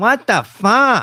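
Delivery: very high-pitched, loud, funny voice. Trying out a friend's catchphrase in a funny way: imitating Colin's catchphrase. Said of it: "You gotta say it in a funny way".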